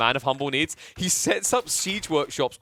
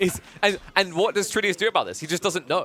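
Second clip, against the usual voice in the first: ordinary talk, nothing marked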